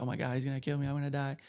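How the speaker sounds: put-on panic, freaking out. Retelling being stuck and pushed by a guard: retelling own freaking out. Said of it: "I'm, like, freaking out".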